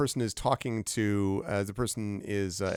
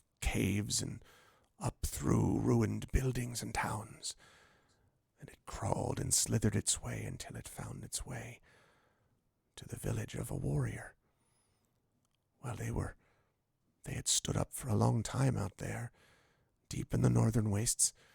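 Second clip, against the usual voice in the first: lowered, dropped, quieter voice; 6 dB quieter than usual. Voicing a character who tells a dragon story: dropped voice. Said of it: "she kind of drops her voice and says".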